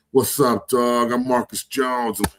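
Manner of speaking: slow, smooth, suave, mock-confident charmer voice. Retelling a teammate's greeting at the bar after drinks: imitating smooth, confident talk. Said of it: "you sound like fucking Rico Suave".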